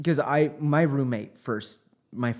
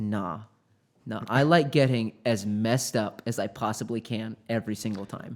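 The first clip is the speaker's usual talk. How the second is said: plain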